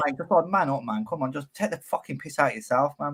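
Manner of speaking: normal talking voice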